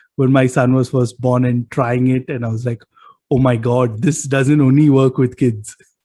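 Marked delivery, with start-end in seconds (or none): none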